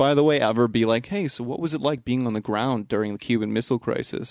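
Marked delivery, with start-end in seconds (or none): none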